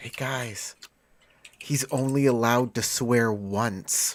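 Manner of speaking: hushed, half-whispered stage whisper. Playing a character telling the other players something: half-whispering in character. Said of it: "I whisper, I whisper, I say".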